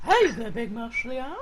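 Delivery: soft, hushed, seedy, creepy character voice. Showing the voice they both used on a Tokyo trip, doing a Herbert from Family Guy voice. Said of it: "bosh out the Herbert the paedophile accent".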